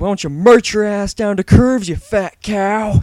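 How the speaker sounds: very loud, very high, shrill, drawn-out taunting holler. Retelling yelling at passing girls from the doorway: imitating own yell. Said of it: "and yelled".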